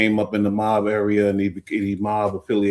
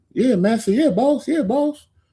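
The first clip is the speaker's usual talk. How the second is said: very high, fawning, mocking servile voice. Mocking how some people sound: imitating a servile cotton-field worker. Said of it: "That's what they sound like".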